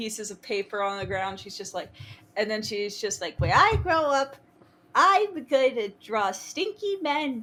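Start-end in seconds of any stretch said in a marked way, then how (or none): 3.4-7.4 put-on tiny, high, drawn-out small-child voice. Imagining a small child on the floor with crayons: imitating baby Tia. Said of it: "this little baby Tia".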